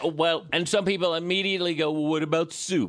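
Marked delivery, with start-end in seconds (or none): 1.9-2.9 pointed, challenging tone. Imitating what some people immediately say back: imitating people's quick retort. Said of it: "That's my impression of".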